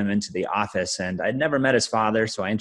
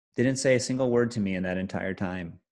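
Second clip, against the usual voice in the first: ordinary talk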